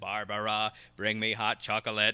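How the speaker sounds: flat, very low monotone robot machine drone. Retelling a TV episode, quoting what the thing first says, in a monotone robotic voice. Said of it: "it speaks in a very monotone kind of robotic voice".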